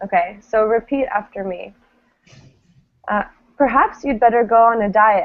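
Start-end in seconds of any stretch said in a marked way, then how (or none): 3.6-5.3 starts high, pitch falls away on "diet". Modeling a sentence for learners to repeat, falling intonation. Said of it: "they have a falling intonation".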